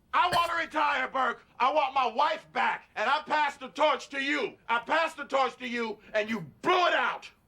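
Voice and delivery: loud, angry shouting. Confronting Burke after saying he had not yelled until now: yelling. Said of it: "But now, I am yelling!".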